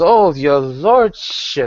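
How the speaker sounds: put-on slightly tipsy, a little drunk, over-polite courtly tone. Voicing a noble guest brought before the governor: slightly drunk Lady Swift. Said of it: "she's slightly intoxicated herself".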